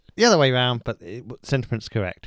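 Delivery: ordinary talk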